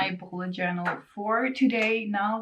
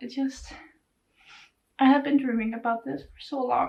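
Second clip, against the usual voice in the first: teary voice, on the verge of tears; 3 semitones higher than usual. Speaker thanks a listener for wanting to join them, tearing up. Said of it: "and now I'm tearing up".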